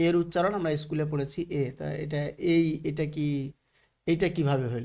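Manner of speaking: usual speaking voice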